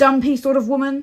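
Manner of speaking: growling. Narrator reads the uncle's reply to his nephew: growled. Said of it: "he growled finally".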